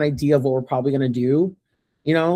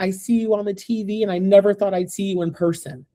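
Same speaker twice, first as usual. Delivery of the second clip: sobbing, crying through words, tearful gush; 5 semitones higher than usual. Retelling a fan who came up after the podium: imitating someone sobbing. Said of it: "this girl came up to me sobbing, crying".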